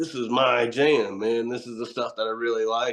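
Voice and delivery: ordinary talk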